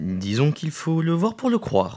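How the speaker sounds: impish, very high-pitched, mischievous teasing voice. Gabriel answers Sylvie's surprised question, mischievous. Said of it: "dit Gabriel malicieusement".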